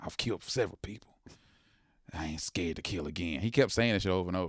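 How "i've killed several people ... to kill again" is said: whispering, lower and quieter. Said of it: "he kept whispering it to me".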